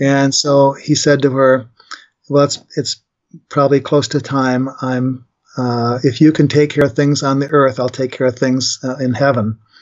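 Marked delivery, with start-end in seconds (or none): none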